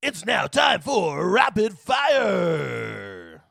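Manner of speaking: cheesy game-show announcer, long "fire". Speaker introduces the next segment in a cheesy game show announcer voice. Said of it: "Drew's cheesy uh, game show announcer voice".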